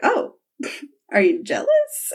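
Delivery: sly, playful teasing, needling jab. Retelling a scene where a character smirks and asks: retelling a smirking tease. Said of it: "kinda smirk".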